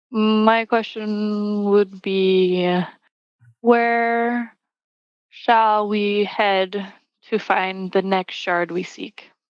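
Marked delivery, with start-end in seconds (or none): 3.5-9.2 mysterious riddle-style tone, "where" drawn out. A player asks their question in the game, in a mystery-like tone. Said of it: "making it sound all mystery-like".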